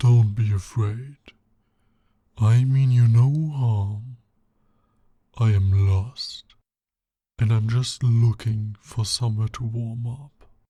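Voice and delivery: loud, booming, talking bear voice. Reading a story aloud to Tal, voicing a bear who starts to talk, in a bear voice. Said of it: "I thought the bear's voice would add to the immersion".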